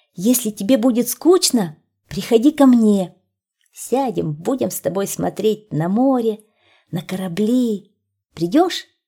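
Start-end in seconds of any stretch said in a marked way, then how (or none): none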